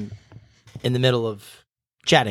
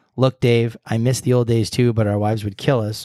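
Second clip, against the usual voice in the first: plain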